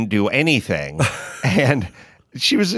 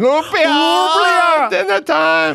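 put-on very high, drawn-out yelling in a grandma voice; 5 dB louder than usual. Joking about saying lumpia, speaker imitates a Guatemalan grandmother yelling for her granddaughter. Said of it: "I sound like a Guatemalan grandmother yelling for her granddaughter".

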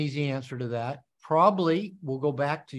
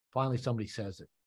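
ordinary delivery

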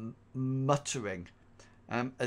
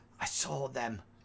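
hushed, quiet voice; 3 dB quieter than usual. Voicing a man who laughs and talks to the player: hushed tones. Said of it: "talks in hushed tones to you".

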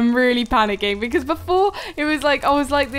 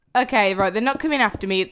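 ordinary talk, nothing marked

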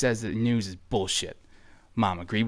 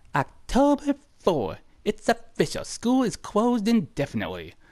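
high put-on child's voice. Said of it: "I don't know why I'm giving that voice".

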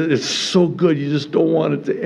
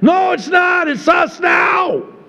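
very high, slow, drawn-out yelling; 4 dB louder than usual. Teaching an Old Testament Bible study to the group, yelling. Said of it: "Sorry, I'm yelling".

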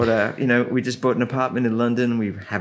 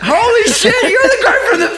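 put-on scream, higher and louder; 10 dB louder than usual. Retelling how a coworker screamed out mid-rehearsal: imitating someone screaming. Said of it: "this guy screams out".

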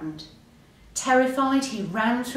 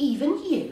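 astonished, surprised, small high voice; 6 semitones higher than usual. Frog responds to Hare saying everyone is frightened sometimes, surprised.

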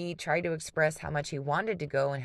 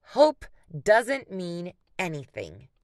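swooping, loud, sharp snapping voice; 3 semitones higher, 7 dB louder than usual. Jen answers Luke, snapping at him. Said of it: "Jen snapped".

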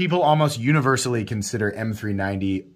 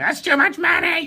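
goofy, silly griping voice, very high. Mocking people who complain about knife prices: silly impression of complainers. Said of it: "my impressions of, of people complaining".

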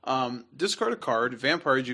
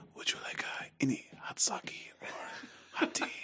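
very soft, hushed whisper; 11 dB quieter than usual. Retelling a soft-spoken man whispering an offer into my brother's ear: whispered. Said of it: "Like this, and like whispered it right into my brother's ear".

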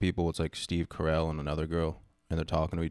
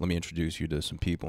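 usual speaking voice

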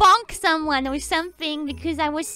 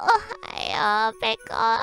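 put-on sleepy, just-woken-up voice; 4 semitones higher than usual. Recounting hearing her greeting and screaming, imitating a sleepy waking-up voice. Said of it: "because I love her waking up voice".

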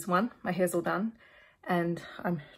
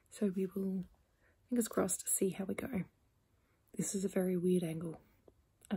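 hushed, much quieter voice; 4 dB quieter than usual. Vlogger alone before sleep, updating on reading plans, speaking very quietly. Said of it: "I'm speaking very quietly".

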